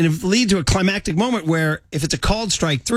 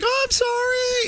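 cartoon shrimp voice, much higher, slower; 4 dB quieter than usual. Recalling a kids movie, the speaker imitates a talking shrimp: Shark Tale shrimp voice. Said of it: "a shrimp that talked like that".

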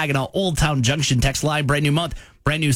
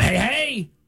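crusty-sounding voice; 8 semitones higher than usual. Doing a listener's texted request to say hey: crusty voice. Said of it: "In your crusty voice".

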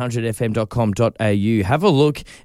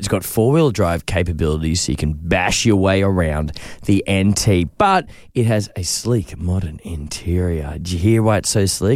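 low, put-on, seductive come-hither voice; 5 semitones lower than usual. Presenting a car to a co-host, using a put-on sexy voice. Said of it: "I've got my sexy voice on".

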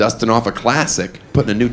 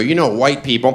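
normal talking voice

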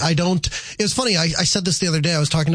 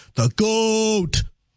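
goat drawn out with rising-then-falling tune; 5 semitones higher than usual. Teaching a listener how to say the word, demonstrating first: drawn out, rising then falling. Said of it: "So I'll demonstrate".

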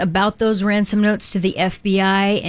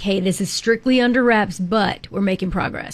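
ordinary talk, nothing marked

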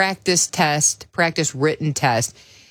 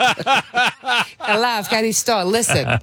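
higher, laughing mock politician voice. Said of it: "I'm talking like Alexi".

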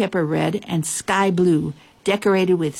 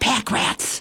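whispered under the breath, hushed; 4 semitones higher than usual. Hiding in the closet at midnight, the bootmaker spots two critters, whispering. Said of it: "whispered the bootmaker".

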